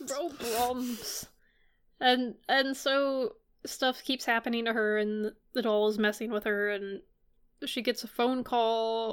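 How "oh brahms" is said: put-on voice of an elderly woman. Retelling a story, quoting the old lady, in an old lady voice. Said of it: "Brahms in the old lady voice".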